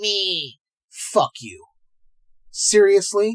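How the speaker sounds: heated, dead-serious, angry outburst. Ranting about people who review-bomb movies with a woman in them: audibly angry. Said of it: "You can hear it in my voice?".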